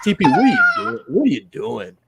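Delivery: high, loud, ringing, disappointed and dismayed voice. Showing the others an impression of O'Leary: extremely disappointed. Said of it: "I'm the impression guy".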